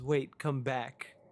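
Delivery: put-on small child's voice. Voicing a small child calling out before the portal closes: small child's voice. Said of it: "you do hear the voice of a small child".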